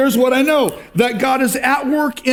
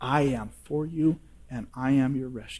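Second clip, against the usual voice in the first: very soft, hushed, barely audible half-whisper; 10 semitones lower, 11 dB quieter than usual. Preaching, voicing God speaking to the listeners: half-whispering. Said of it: "He's whispering to you".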